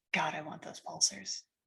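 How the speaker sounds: very quiet, barely audible mutter under the breath. Voicing a character eyeing valuables on a ship: character muttering under breath. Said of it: "muttering under his breath".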